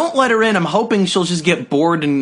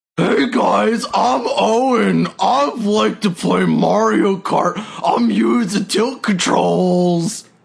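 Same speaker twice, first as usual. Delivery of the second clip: very slow, rough, creaky, higher, stretched-out delivery; 5 semitones higher than usual. Doing an impression of an absent friend for the others: impression of Owen. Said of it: "I have a really good impression of him".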